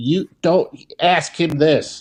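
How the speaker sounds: mock fed-up scolding. Recalling yelling at reporters on TV, retelling own yelling at TV. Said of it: "I was yelling at the T V".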